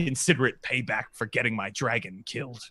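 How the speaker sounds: wounded mutter under breath. The game narrator voices a character speaking to the players in a hurt voice under his breath. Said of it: "in a hurt voice".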